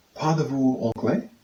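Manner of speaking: ordinary talk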